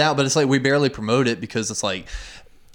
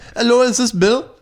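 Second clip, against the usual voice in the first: put-on Indian accent, pitched up; 8 semitones higher, 4 dB louder than usual. Imitating a telemarketer from a pharmacy calling: imitating Indian telemarketer accent. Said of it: "some fucking Indian dude".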